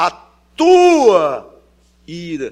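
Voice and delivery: all the weight placed on tua. Reading a line aloud to stress the pronoun, strong emphasis on tua. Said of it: "E eu colocaria todo o peso aqui no tua, do pronome".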